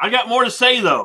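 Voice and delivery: shouting. Speaking loudly so a remote co-host can hear over the webcam: shouting. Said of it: "You're shouting".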